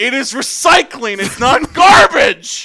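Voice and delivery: loud, stern, slow yelling. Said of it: "having to yell at him".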